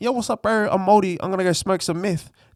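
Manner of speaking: Māori accent with a put-on moldy voice. Explaining negative stereotypes to the boys, the speaker gives an example in a put-on moldy voice. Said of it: "I just put on a moldy voice".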